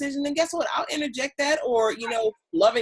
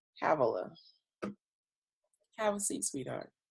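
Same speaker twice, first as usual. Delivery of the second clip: put-on affectionate voice, lower and quieter; 9 semitones lower, 10 dB quieter than usual. Acting out what a wished-for partner would say, imitating a loving tone. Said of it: "In a loving way, in that exact tone".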